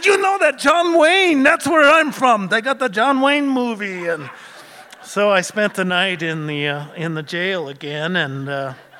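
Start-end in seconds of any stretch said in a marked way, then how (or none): 0.0-4.1 cheap fake Mexican accent, much higher, louder, faster. Retelling what he said before a night in jail, in a cheap Mexican accent. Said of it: "I go into this cheap Mexican accent".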